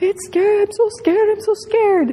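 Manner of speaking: put-on acted, very high, panicked, frightened child's wail. Retelling what a kid screamed while having blood drawn, imitating a kid screaming. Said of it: "and he was screaming".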